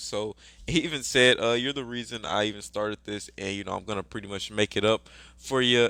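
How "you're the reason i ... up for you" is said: ordinary talk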